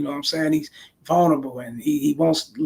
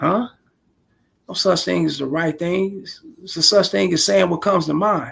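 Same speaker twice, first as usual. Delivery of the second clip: plain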